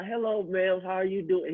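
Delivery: shy, bashful, timid, reluctant voice. Retelling how he greeted passersby while selling: imitating a shy guy. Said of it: "He's very shy, right?".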